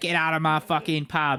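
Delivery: put-on woman's shouting voice. Imitating a pub landlady telling people to leave: Peggy Mitchell impression. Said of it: "can Peggy Mitchell come?".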